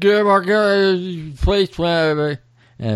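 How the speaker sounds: high, slow put-on drunk voice. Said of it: "the drunk mimics him".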